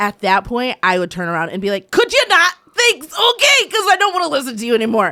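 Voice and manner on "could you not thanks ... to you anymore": very high, shrill, loud scolding shout. Acting out turning around in a theater to hush someone: pretend yelling. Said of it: "I got yelled at".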